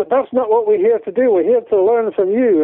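bad put-on Scottish accent. Retelling a man's objection to the speaker's questions, bad Scottish accent. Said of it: "that's a really bad Scottish accent".

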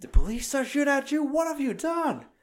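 very high, shrill, swooping, frantic panicked outburst. Retelling a scene where police pounced on the characters, imitating someone freaking out. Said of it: "he's freaking out".

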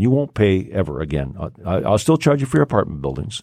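ordinary talk

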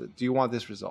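calmed-down, calm voice. Showing how he asks someone a question, calmed-down voice. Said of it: "let me calm down the whole voice".

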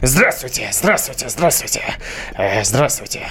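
animated, put-on cartoon character voice. Showing how a cartoon character talks, imitating his voice. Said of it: "он таким голосом разговаривает".

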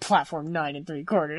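mock muttering under breath. Retelling a film scene, a man repeating a boy's question, muttering under his breath. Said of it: "Like muddling under his breath".

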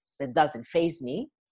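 normal talking voice

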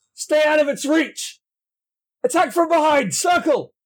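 very high, shrill, barked shouting. Narrating a fight, voicing a man who shouts to his men: shouting orders. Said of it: "shouts to his men".

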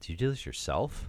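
disgusted, sneering tone, dripping with disgust, acted out. Retelling a cousin's question about a painted dragon: imitating a disgusted cousin. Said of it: "With such disgust in his voice".

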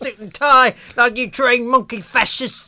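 very high, loud, terrible put-on Cockney accent. Mocking someone's terrible accent by redoing his line, in a put-on Cockney accent. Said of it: "I actually think I did that better than he did".

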